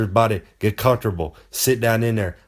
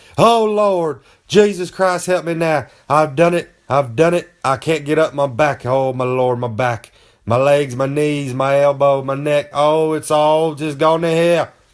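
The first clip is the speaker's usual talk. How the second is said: put-on agonized screaming, high-pitched and very loud; 5 semitones higher, 3 dB louder than usual. Speaker acts out pretending they cannot get up from their chair, retelling a scream. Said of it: "I start just screaming at, as loud as I can".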